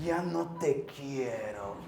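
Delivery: acted scornful, disdainful, low, quiet contemptuous tone. A father acts out his son's words to him; imitating a son's contempt. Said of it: "Pero con desprecio".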